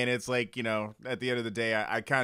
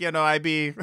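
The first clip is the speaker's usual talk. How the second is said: loud, fake, put-on Caribbean island accent; 5 semitones higher, 5 dB louder than usual. Retelling a visitor faking island speech: imitating a fake island accent. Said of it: "literally was talking like".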